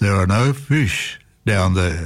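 booming voice. Telling a joke, an unseen voice calls out to an ice fisherman, booming. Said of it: "a voice boomed out".

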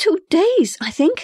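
very high, stumbling stammer. A girl found hiding in a closet answers the woman of the house, stammering. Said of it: "the girl stammered".

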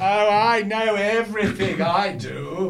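slow, smug, boastful know-it-all tone.

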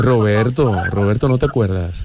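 put-on Mexican accent, steady and smooth.

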